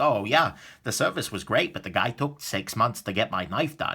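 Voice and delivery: ordinary talk, nothing marked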